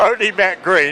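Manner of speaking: high, laughing nonstop through the words.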